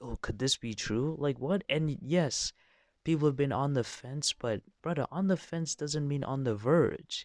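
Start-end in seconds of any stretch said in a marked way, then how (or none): 0.0-1.2 mock, put-on whispering voice. Mocking how people react to the Superman news, imitating people whispering.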